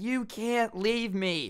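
slow, high angry whine.

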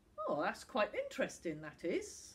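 plain

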